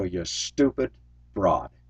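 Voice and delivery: put-on muttering. Recounting not honking at a woman driver, retold mutter under breath. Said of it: "under my breath".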